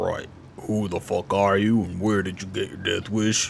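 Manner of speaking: super deep, very low-pitched voice. Trying out voices while deciding on a character's voice: super deep voice. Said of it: "I could just do the super deep voice thing where it's like".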